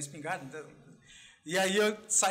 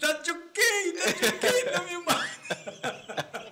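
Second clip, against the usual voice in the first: laughing while talking, higher and louder; 11 semitones higher, 4 dB louder than usual. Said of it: "Ela começou a rir".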